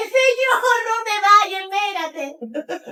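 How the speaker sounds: very high, drawn-out, desperate pleading shout. Speaker recounting crying out to the Lord, retelling a desperate shout. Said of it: "grité y le dije".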